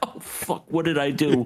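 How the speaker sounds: scared, horrified, terrified reaction. Retelling a character's reaction to a scene: imitating a terrified reaction. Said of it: "he just looks terrified".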